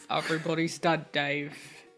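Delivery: heavy, deep timbre put on, dropped low. Imagining a line spoken in a deep voice: Alan Rickman voice. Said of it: "deep, deep timbre of Alan Rickman's voice".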